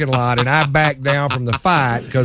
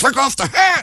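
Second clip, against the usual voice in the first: put-on irritated, pissy male voice, much higher; 12 semitones higher than usual. Retelling a confrontation with a guy over a hat, imitating a pissy guy. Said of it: "real pissy".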